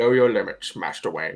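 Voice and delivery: put-on low, aged, proper-sounding British man voice. Friends take turns trying the voice and one has a go, old British Alfred impression. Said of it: "Just be British and old".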